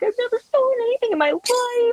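panicky, tearful, very high-pitched wailing cry. Retelling the moment she realized she stole the ornament, retelling her panicked voice. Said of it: "I'm just panicked".

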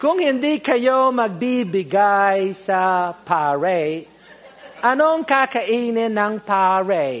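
put-on American accent. Imitating an American-Italian missionary priest asking his congregation to give, with an American accent in Tagalog. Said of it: "still with an American accent".

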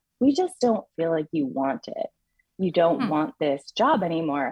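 ordinary talk

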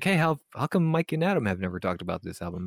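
normal talking voice

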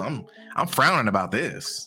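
ordinary talk, nothing marked

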